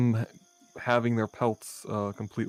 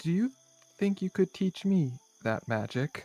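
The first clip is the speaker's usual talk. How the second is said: whispering, higher; 7 semitones higher than usual. Voicing Lucia asking Lady Odette a question before bed: whispered tone. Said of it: "kind of in a whispered tone".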